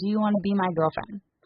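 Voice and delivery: ordinary delivery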